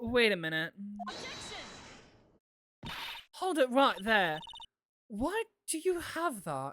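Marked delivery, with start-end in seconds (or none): 1.1-6.7 put-on British accent slipping in suddenly, unbidden. Voicing a courtroom objection to a witness, with an unexpected British accent. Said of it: "where am I getting a British accent?".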